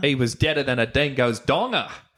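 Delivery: gamely attempted put-on Australian accent. In an accent game, repeating a sentence of Australian words: Australian accent. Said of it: "game should be Australian accent".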